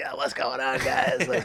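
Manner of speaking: slow, put-on hoarse, voiceless lost voice. Retelling what Coach Nelson said: imitating Coach Nelson's lost voice. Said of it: "who didn't have a voice".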